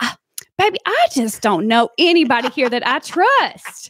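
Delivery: put-on Arkansas Southern accent with swooping pitch. Retelling what a woman from South Arkansas said, imitating Elizabeth's accent. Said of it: "she'd say in her accent".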